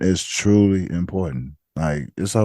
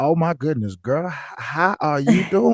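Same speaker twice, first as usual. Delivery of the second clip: put-on, overdone country accent, pitched high; 8 semitones higher than usual. Showing a sound to avoid when greeting someone: put-on country voice. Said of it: "if you're country, you're country".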